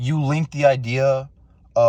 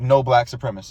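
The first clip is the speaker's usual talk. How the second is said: ordinary delivery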